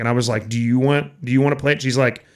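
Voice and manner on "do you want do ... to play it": mock sassy delivery. Retelling a comeback to an audience member: imitating own sassy remark. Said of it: "I was being a little sassy that night".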